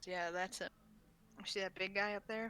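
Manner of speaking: voice dropped a little. As the group passes by, their friend speaks up, voice dropped a little. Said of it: "your friend kind of drops his voice a little".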